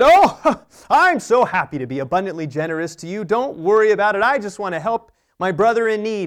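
loud, high, showy bragging at top of voice. Speaker acts out himself giving money to a needy man so all hear: mock-showy, at top of voice. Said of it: "at the top of my voice so everyone around me could hear".

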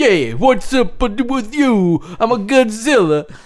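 fake Italian accent, badly laid on. Joking about casting a spaghetti commercial, in a bad Italian accent. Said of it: "He sounds just like that".

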